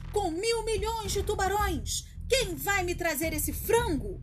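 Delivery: big roaring bellow. Gancho roars at his henchmen. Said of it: "Rugiu ele".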